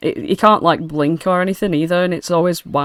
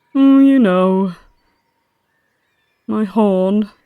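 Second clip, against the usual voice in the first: tearful, very slow crying lament; 4 semitones higher than usual. Voicing the sad horse character about his lost horn: crying voice. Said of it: "you can hear he's probably crying too".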